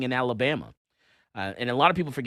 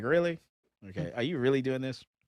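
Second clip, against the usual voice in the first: mock-incredulous, disbelieving laughter. Complaining about customers who walk in yelling, the speaker acts out his reaction: retelling an incredulous laugh. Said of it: "I just sit there and laugh like".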